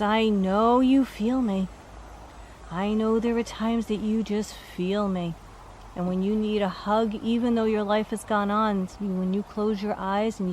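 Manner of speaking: normal talking voice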